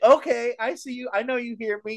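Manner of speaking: very high-pitched yell. Yelling at a batter doing practice swings who ignores the speaker: retelling a yell. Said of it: "And I'm yelling at the guy".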